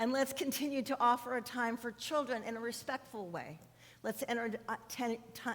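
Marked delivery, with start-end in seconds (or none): 4.0-5.6 stuttering, stumbling false start, tripping over words. Addressing the congregation, the speaker trips over words, stuttering. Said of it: "I'm uh, stuttering".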